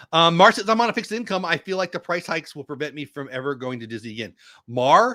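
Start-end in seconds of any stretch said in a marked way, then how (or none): none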